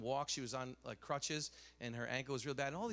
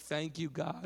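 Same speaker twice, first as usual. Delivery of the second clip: put-on girl's yell, higher pitch; 3 semitones higher, 4 dB louder than usual. Retelling a girl running full speed: imitating a girl yelling. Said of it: "just yelling out".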